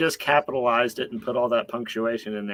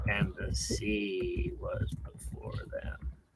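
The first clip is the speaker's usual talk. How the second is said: hushed, foreboding, ominous whispered narration; 3 semitones lower, 11 dB quieter than usual. Narrating a story, deciding it needs to be more ominous; ominous. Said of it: "we need to be more ominous".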